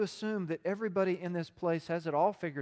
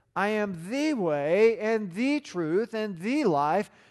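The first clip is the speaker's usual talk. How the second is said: every the stressed, hit hard each time; 2 semitones higher, 6 dB louder than usual. Quoting Jesus's answer about the way, stress on each 'the'. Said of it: "Now you heard me emphasize it with my voice".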